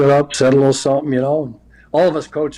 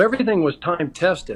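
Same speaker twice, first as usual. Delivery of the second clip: ordinary talk, nothing marked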